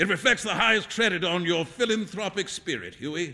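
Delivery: plain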